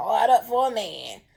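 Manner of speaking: put-on grandma voice. Tarot reader hearing a phrase in grandma's voice: imitating grandma's voice. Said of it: "I heard it in my grandma's voice".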